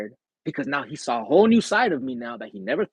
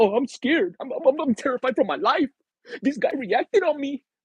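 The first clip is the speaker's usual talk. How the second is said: very high, terrified, frightened voice with stammer; 12 semitones higher than usual. Retelling how people act after you react: imitating scared people. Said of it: "now they're scared".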